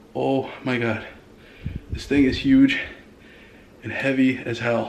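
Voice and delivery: panting, out of breath. After hauling a huge, heavy box into the house, huffing and puffing. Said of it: "I'm huffing and puffing right now".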